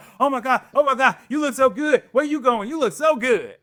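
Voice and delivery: put-on, very high, rapid, giddy, crazed gushing. Retelling how a girl reacted to a new outfit: imitating someone gushing excitedly. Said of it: "almost was going crazy".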